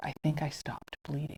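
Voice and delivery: mock whispering. Retelling what a woman leaned over and said: imitating someone whispering. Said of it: "she leans over and whispers".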